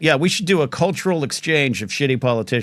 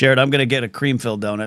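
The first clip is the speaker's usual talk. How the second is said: plain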